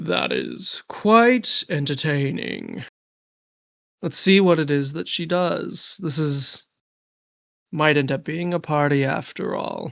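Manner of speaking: character voice of a lion-faced giant. Voicing a tall lion-faced character who bends down to a dwarf, Phorestes lion voice. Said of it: "let me do a lion voice here".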